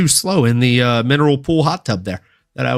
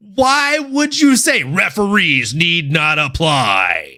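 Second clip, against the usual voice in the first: put-on robot voice; 3 semitones higher than usual. Discussing a fight card, asking why someone would say that, Transformers voice. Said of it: "going into like Transformers voice".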